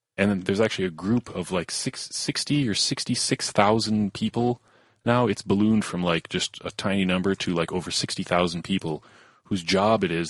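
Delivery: ordinary delivery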